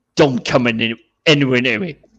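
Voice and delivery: military commanding tone. Retelling how a guest warned fans away: imitating a war voice. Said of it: "the war f-, voice".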